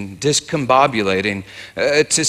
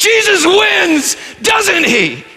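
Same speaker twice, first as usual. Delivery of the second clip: put-on slow commanding shout, very high, loud and drawn out; 5 dB louder than usual. Speaker retells what they yelled at evil as it was leaving: retelling a yell. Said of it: "I yelled".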